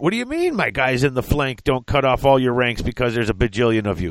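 ordinary delivery

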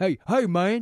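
thick, deep, heavy Southern drawl. Imitating a guy's greeting while describing him: thick deep southern accent. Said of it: "this real thick".

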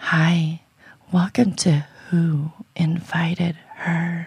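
put-on sultry, seductive, breathy-style hotline voice. Asked by the other hosts to do a clean take: phone sex voice. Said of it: "Give us your best phone sex voice".

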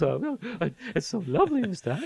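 put-on, very high, breathy, gushing falsetto.

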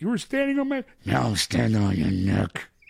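loud, angry, barked outburst with swooping pitch. Correcting the other's impression: angrier Harrison Ford impression. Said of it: "a little more angry and more like".

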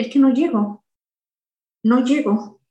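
ordinary delivery

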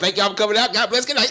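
very high, loud, squeaky voice. Closing out the show while imitating a friend: imitating P's voice. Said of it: "let me try to do my P voice again".

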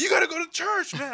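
very loud, shrill, high-pitched booming yell. Retelling a story of being chased: imitating someone yelling. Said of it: "he was yelling".

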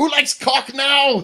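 put-on speaking with a German accent. Riffing on a fight scene with a duck, speaking in a Hitler accent. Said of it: "why was that like a Hitler accent?".

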